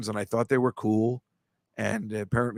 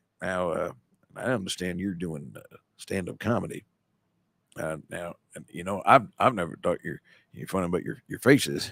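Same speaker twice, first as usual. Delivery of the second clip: slow, low, dull, plodding, hesitant boring drone; 5 semitones lower, 3 dB quieter than usual. Imitating a slow, boring relative who comments on stand-up comedy: slow, boring voice. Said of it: "I would do this amazing imitation of him".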